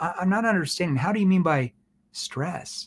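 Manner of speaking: bewildered, confused, puzzled tone. Teaching tones, the speaker demonstrates a question asked in a confused tone. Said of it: "that's a confused tone".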